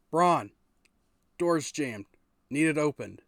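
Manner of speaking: very loud, far-carrying shout. Voicing a character calling down the hall for help: NPC calling down the hall. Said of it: "You hear a yo down the hall".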